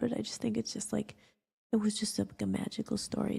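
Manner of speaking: crying while talking.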